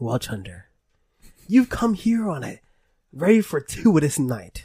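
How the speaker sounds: put-on pirate-style character voice. Storyteller voicing the innkeeper, replying to Chunder the Bard: pirate-like innkeeper voice. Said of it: "Craggy-eyed and old. "Traveler," he says. "Weary traveler, what brings you round?" It's like a pirate. "What brings you round to these parts? What brings you to our humble tavern? Our..." He's a pirat".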